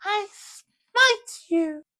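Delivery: very high, squeaky, puffy voice. Recounting a player's game character, imitating him in Sunnyside's high squeaky voice. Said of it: "in a voice much higher than this and much more squeaky and puffy".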